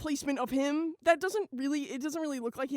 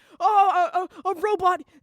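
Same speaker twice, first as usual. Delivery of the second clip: shrill, very loud, high cartoony shout; 5 semitones higher, 10 dB louder than usual. Telling listeners what SpongeBob says, in a SpongeBob impression. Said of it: "That's my SpongeBob impression".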